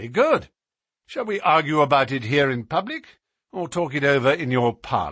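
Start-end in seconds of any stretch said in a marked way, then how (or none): none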